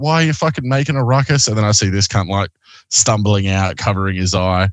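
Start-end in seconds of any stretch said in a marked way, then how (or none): 0.0-1.5 a full scream, hurled out. Retelling what a former partner screamed at them out front: retelling a scream. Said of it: "who's screaming at me".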